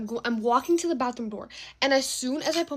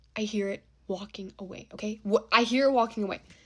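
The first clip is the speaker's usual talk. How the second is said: ordinary talk, nothing marked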